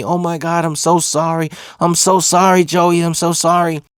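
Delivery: play-acted weepy, tearful, heartfelt crying voice. Retelling a classmate's tearful apology: imitating someone crying. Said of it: "She's crying, apologizing to me".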